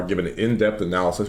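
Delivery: ordinary delivery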